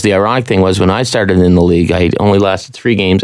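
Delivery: ordinary talk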